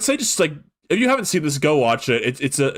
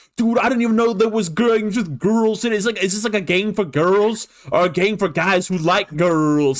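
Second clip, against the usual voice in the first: put-on pitched-up, would-be hip gangster teen talk; 5 semitones higher than usual. Retelling what two teen boys in a show said: imitating would-be gangster teen boys. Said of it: "kind of hip and gangster kids start, like, talking like".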